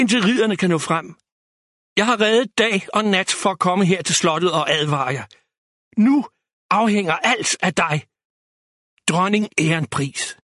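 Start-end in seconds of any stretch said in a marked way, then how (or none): none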